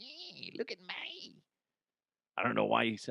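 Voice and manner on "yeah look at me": put-on high, soft raccoon voice with Australian accent. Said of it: "had, like, an, uh, Australian accent".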